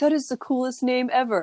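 put-on stoner voice. Speaker mimics people reacting to her name: stoner voice. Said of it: "I just changed my voice to sound like some stoner".

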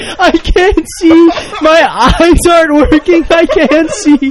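shrill, very loud, very high panicked screaming. Retelling a man who thought he was blind, retelling him screaming. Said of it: "he started screaming".

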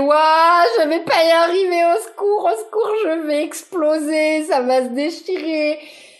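high, play-acted, frantic, panicked outcry. A mother retells a moment during childbirth, acting out her panic. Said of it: "ces parts en panique".

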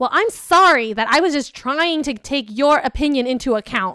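put-on, defensive, dripping with heavy sarcasm. Recalling an argument during a hike, retelling a defensive retort. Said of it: "I got so defensive that I was".

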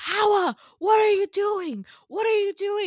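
shrill, high yell at full volume. Retelling how a man screamed at the speaker after the lifeboat dropped, retelling a scream. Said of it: "he was screaming at me".

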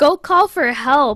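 loud, drawn-out screaming yell. Retelling what was shouted at the TV during a movie: imitating own screaming. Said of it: "I was literally screaming at my T V".

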